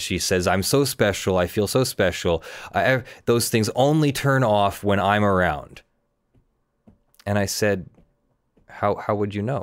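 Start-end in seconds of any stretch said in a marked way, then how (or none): none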